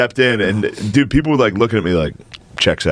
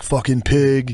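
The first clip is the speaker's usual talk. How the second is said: mock jeering, cursing, put-on screaming; 3 semitones higher than usual. Retelling a friend screaming at a passing cop: imitating a friend screaming. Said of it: "he screamed".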